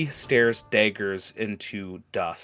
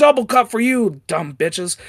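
loud, high, shrill yell; 12 semitones higher, 7 dB louder than usual. Retelling how he yells at the guys at work, retelling a yell. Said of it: "he just yells at the guys going".

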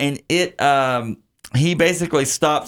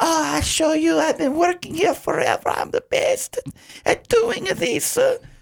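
very high, bad fake Italian accent. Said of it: "I'm only doing this this bad".

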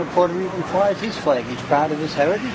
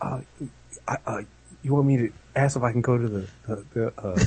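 timid, hesitant, stumbling half-whisper, barely audible; 6 semitones lower, 11 dB quieter than usual. Acting out the same guy at home near his wife: imitating timid half-whispering. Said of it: "why are you whispering?".

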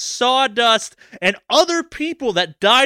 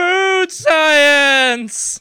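put-on excited yell, "science" drawn out; 4 semitones higher, 4 dB louder than usual. Voicing a scientist who just ran a taste test: yelling like a food scientist. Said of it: "Is that what he yells".

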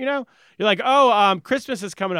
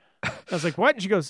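usual speaking voice

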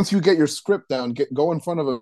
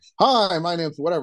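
energetic voice, strongly projected; 2 semitones higher than usual. Showing beginner DJs how to MC: projected voice with energy. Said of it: "you project it out more".

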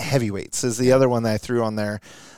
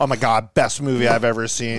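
ordinary talk, nothing marked

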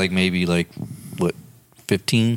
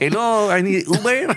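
put-on Mexican accent, pitched very high; 12 semitones higher than usual. Friends joking about a friend walking around town in a sombrero: fake mexican accent. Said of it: "With an accent".

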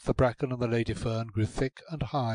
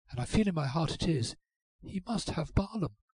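barely audible, faint, high half-whisper; 5 semitones higher, 6 dB quieter than usual. Molly speaks to Ruth as something moves in the bracken, in a faint half-whisper. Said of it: "said Molly in a faint whisper".

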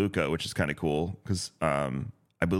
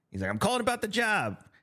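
put-on very high, pitched way up New York accent; 14 semitones higher than usual. Recalling the different characters they used to do, Frank Rizzo New York voice. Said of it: "he had the New York guy".

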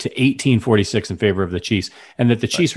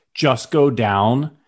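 usual speaking voice

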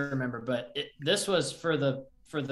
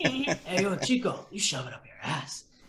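full-voiced stage whisper; 4 semitones higher than usual. Quoting a wrestling promo, imitating The Rock half-whispering. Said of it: "he whispers".

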